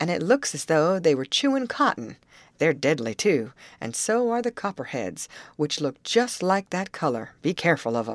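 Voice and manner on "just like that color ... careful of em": ordinary delivery, nothing marked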